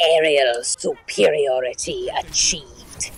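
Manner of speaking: very low, angry villain voice, dropped very low. Recalling a game character's voice line, doing an angry villainous Pharah impression. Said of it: "Sounded angry. villainous. It was like it was dastardly".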